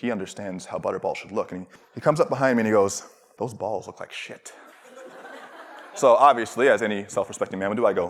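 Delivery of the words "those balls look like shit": snooty, condescending, talking-down tone. Retelling a manager's remark about the butter balls: imitating a condescending manager. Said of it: "he's looking very, very condescending".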